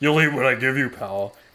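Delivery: mock contemptuous, scoffing, dismissive tone. Retelling what the apprentice scullion said in the galley: imitating a scoff. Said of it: "scoffs at me and says".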